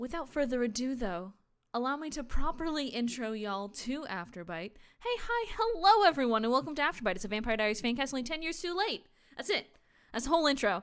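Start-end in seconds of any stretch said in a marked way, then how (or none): 5.0-10.8 loud, rattled-off, rapid-fire, as fast as possible. A host gives the fan cast's whole intro, as fast as possible. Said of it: "That's as fast as I can say it".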